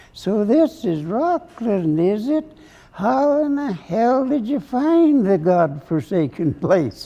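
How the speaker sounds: piping, high-pitched speaking voice. Telling a story, the speaker quotes a man addressing an audience in his high-pitched voice. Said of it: "he says in his high-pitched voice".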